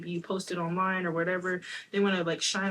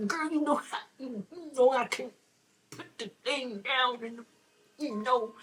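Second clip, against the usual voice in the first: sleazy, high, no-good gigolo voice; 6 semitones higher than usual. Speaking to a girl in a put-on gigolo voice. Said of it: "That's my no good dude voice".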